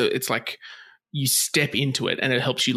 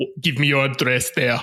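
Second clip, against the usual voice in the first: put-on killer robot voice; 3 dB louder than usual. Retelling how the Terminator calls the hotel: Terminator voice. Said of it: "He's like".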